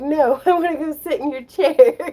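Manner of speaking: very loud, slow, drawn-out, high cat voice. Voicing the cat who wants the chair: voicing Ember the cat. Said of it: "She's like".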